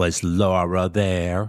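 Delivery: put-on voice of a thirteen-year-old girl. Mother retelling her thirteen-year-old daughter's question, in a teenage girl voice. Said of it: "In her teenage voice".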